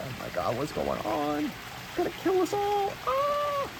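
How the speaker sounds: mock frantic, sobbing panic, very high, rising. Retelling seeing a toy staring through the window: imitating own crying panic. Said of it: "I started crying".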